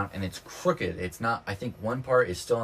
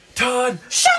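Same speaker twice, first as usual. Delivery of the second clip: play-acted sudden angry outburst, very loud and very high; 11 dB louder than usual. Retelling how Mom snapped at Dad: imitating someone snapping. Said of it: "Mom just snaps".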